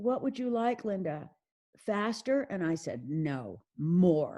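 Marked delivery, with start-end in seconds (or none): 0.0-2.4 courteous, soft-spoken, quiet delivery. Retelling how Ted answered Linda, imitating Ted's polite, quiet manner. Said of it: "in his polite, quiet manner".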